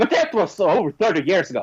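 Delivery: quick, sharp, snappy retort landing like a crash. Retelling a debate exchange, how she answered: imitating a snappy retort. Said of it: "she snaps back at him".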